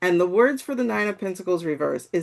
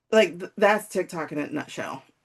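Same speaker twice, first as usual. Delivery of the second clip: normal talking voice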